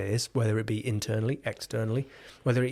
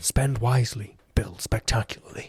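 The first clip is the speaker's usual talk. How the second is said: put-on, formal, mock presenter voice; 3 dB louder than usual. Reading out generated quotes on architecture for a joke: put-on presentation voice. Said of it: "should I read them in my presentation voice?".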